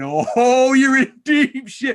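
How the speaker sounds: very high, loud, drawn-out chuckling, laughing jeer. Retelling a teammate's remark from the side of the table: imitating Andy Barks laughing. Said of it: "at the side of the table laughing".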